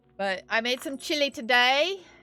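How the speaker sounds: put-on British accent. Changing the subject after a rant, slipping into a British accent. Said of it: "I don't know why I went into British accent".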